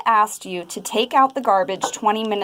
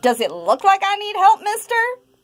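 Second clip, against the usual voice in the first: angry, very high, climbing pitch; 10 semitones higher than usual. Acting out a reply to a video game store salesperson, in an angry tone. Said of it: "you respond with an angry tone of voice".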